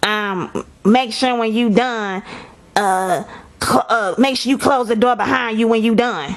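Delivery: heavy, scratchy rasp throughout. Telling how a man turned and gave instructions: imitating a raspy voice. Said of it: "he had a raspy, raspy voice".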